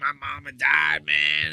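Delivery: mock weepy, tearful, slow crying voice. Retelling a man's news interview about his mother: imitating someone crying. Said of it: "He's, like, crying on the news".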